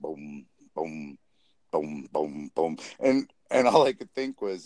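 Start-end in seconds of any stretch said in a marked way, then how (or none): 0.0-2.8 plodding, very low, slow, one-note bass thuds. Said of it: "He was just like".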